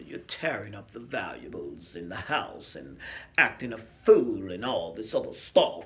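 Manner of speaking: put-on snobby tone. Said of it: "she had that real snobby attitude".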